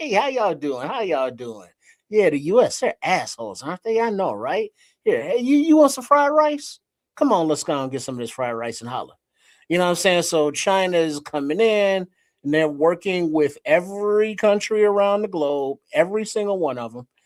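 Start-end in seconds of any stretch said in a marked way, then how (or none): 0.0-9.1 playful, flirty, swooping put-on voice. Acting out China coming in to woo other countries: acting out China courting countries. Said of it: "China is, is coming on in like".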